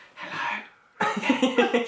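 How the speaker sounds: quiet, soft, hushed and murmured voice. Pretending to host a review beside a sleeping baby: pretend quiet review voice. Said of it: "got to do it really quietly".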